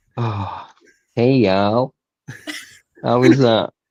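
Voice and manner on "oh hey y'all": put-on friendly Texan accent. Asked for a "hey y'all" after it comes out he's in Texas, put-on Texan accent. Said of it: "Just just give us a hey y'all".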